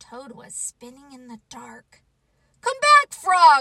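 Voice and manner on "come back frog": very loud, high shout at full volume. A toad spinning in the dark calls after the frog, shouting. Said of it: "he shouted".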